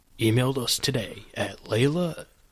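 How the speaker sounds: put-on movie-trailer announcer voice. Asked by the other speaker to do the email plug, movie announcer voice. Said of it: "Can you do movie announcer?".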